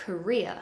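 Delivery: career with weight on second syllable -reer. Word stress drill: career stressed on second syllable. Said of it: "We stress the second syllable".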